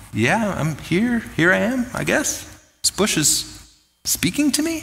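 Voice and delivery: halting, doubtful, hesitant voice. Retelling Moses answering the speaking bush: voicing Moses unsure. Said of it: "I kinda read it as, like, Moses going".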